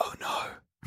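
barely voiced, almost whispered, very hushed. Voicing the mayor who sees distant lights and stops: almost a whisper. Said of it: "almost in a whisper behind you".

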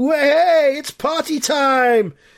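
high shout, stretched very long. Commentator relaying what the Melchester fans are shouting. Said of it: "the Melchester fans are shouting".

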